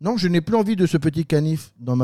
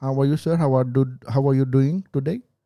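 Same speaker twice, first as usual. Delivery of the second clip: put-on Indian English accent. After asking how the indian accent is done, trying it in english: indian accent. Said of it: "Comment on fait l'accent indien ?".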